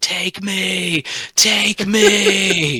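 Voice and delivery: very high, very loud, shrill desperate scream. Retelling how he dropped to his knees under strange lights, retelling his screaming. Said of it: "started screaming".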